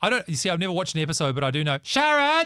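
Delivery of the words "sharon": very high-pitched, loud hollering. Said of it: "that's my [name] impression".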